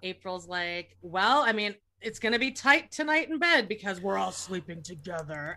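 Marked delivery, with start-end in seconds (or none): 1.0-5.5 put-on, mock-menacing voice. A viewer recounts the last scene, quoting April: imitating April, mock-menacing. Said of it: "menacing the way she said it".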